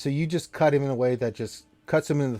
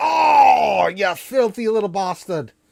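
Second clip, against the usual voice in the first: shrill, very loud, very slow, furious, pained tone; 9 semitones higher, 9 dB louder than usual. Voicing a dwarf hit by a firebolt: hurt, angry dwarf cursing. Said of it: "You hear him like".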